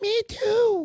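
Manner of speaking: small, high little voice.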